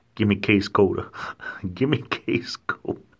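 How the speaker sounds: imitated southern US accent. Describing the country's many regional accents, the speaker demonstrates a southern accent. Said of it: "In the South, you hear".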